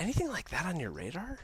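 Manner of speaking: genuinely curious voice. Showing how to ask someone a question without sounding like a jerk, in a curious tone. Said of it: "the curiosity tone".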